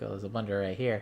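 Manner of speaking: ordinary delivery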